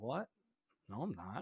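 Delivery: meek, sheepish, caught-off-guard tone. Describing a creepy vampire caught off guard, retelling his reply, mock-sheepish denial. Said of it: "it's like very sheepish".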